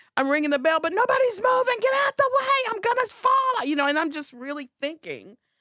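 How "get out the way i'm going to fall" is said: screaming at the top of the lungs, very high. Retelling a scary bike ride among fast riders: imitating someone screaming. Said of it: "I'm screaming at the top of my lungs".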